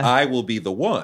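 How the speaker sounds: normal talking voice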